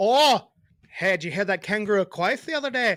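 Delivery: failed put-on Australian accent. Joking with a friend about spelling a word, bad Australian accent sounding Irish. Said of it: "That sounded Irish".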